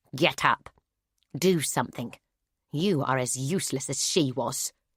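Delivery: harsh ancient voice, neither male nor female. A narrator voices an unknown presence ordering a choking woman to get up; harsh ancient voice. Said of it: "A harsh voice, like that of an ancient, neither male nor female".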